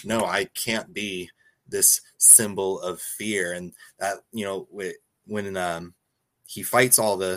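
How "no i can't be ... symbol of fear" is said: usual speaking voice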